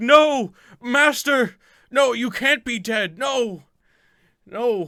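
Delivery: desperate, grieving, anguished wail, very high and loud. A game master voicing a man over his dead master, crying out. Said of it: "the guy cries out".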